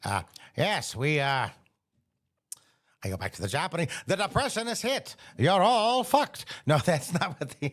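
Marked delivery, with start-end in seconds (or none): 0.0-6.5 vintage news-bulletin mid-Atlantic accent, pitched up. Speaker demonstrating a mid-atlantic accent, old-timey mid-atlantic accent. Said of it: "very old-timey sort of sound".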